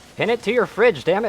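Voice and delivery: high, loud, put-on mock yelling.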